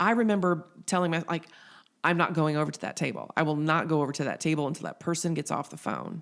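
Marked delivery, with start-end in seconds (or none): none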